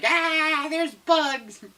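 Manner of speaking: very high-pitched, shrieking, panicked screaming cry. Retelling how a stung person ran about: imitating someone screaming. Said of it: "screaming and being like".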